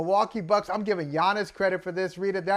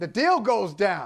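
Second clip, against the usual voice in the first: ordinary talk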